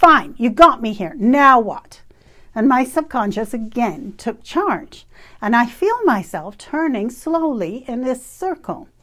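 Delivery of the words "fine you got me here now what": loud, mock irritated, fed-up tone. Recounting what they said back when still annoyed, retelling in an irritated tone. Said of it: "So in this irritated tone".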